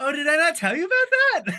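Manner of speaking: casual, oblivious, high, loud, offhand surprised tone.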